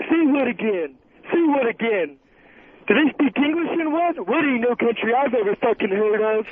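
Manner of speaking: low, deep, botched, cartoonish character voice. Calling in to a show to do an impression: Bullwinkle voice. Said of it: "that's Bullwinkle".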